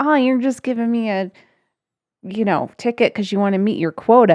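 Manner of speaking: put-on, angry, indignant, pissed-off tone. Retelling what a stopped driver said to an officer: imitating an angry woman. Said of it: "she got all pissed off".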